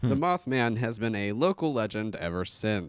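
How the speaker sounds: broadcast news anchor reading delivery. Repeating a line of the Mothman story, in a news reporter voice. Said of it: "I sound like a news reporter".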